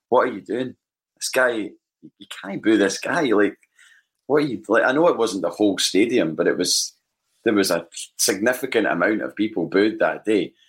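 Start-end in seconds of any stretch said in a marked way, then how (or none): 0.1-4.6 furious, livid screaming. Retelling shouting at people booing nearby: retelling own past screaming. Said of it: "I was screaming at folk round about me going".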